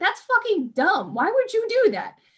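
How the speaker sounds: very high, sing-song, swooping voice. Describing a game ending where the party reacts to a sacrifice, imitating the rest of the party. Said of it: "The rest of your party's like".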